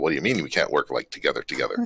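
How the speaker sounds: ordinary talk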